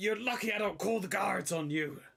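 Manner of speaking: put-on high, very old, elderly dwarf man voice. Voicing an old dwarf man who comes out of his house, in an old dwarf voice. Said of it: "This really old dwarfish man comes out the house going".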